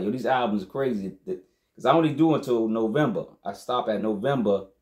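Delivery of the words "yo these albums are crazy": usual speaking voice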